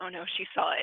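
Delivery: put-on muttered voice, mumbled under the breath. Retelling what a friend said at a wedding: imitating Megan under her breath. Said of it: "I hear Megan under her breath go".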